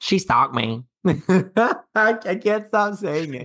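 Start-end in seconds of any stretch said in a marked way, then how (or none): 0.0-0.8 put-on twangy honky-tonk country Southern accent. Doing an impression of a woman saying how they met: honky-tonk southern accent. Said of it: "Your impression is so good. ... She got the honky tonk southern accent going on".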